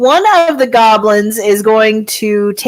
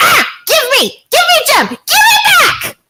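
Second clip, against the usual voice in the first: very high, swooping goblin voice, all over the place. Voicing a goblin that skids to a stop before a player: goblin voice. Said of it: "you see a goblin come booking around the corner".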